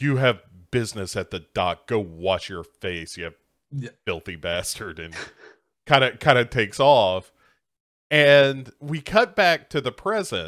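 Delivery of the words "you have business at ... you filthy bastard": low, mock condescending, superior, dismissive tone. Recapping an episode, retelling a character's line to the handyman, mock-condescending. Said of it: "condescendingly is like".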